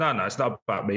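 normal talking voice

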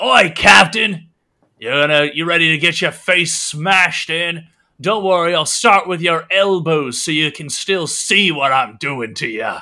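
high, loud, jeering, taunting shout. Voicing a character who shouts a threat toward the captain: shouting a taunt. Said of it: "shouts out towards you".

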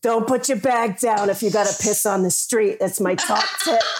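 put-on New York accent. Quoting a friend from New York, in a New York accent. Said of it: "so I might as well do the accent".

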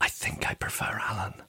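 very hushed, jittery, nervous, very quiet whisper. Talking to the person who said it, the speaker retells a nervous whisper. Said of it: "you whispered nervously".

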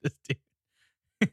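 nonstop laughing and giggling through the words. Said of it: "Sorry, I can't stop laughing at this guy".

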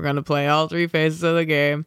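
put-on flat, measured voice. Imitating how the team talks about winning: half Belichick impression. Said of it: "half Belichick impression right now".

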